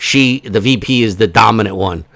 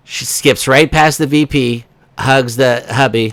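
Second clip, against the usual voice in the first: normal talking voice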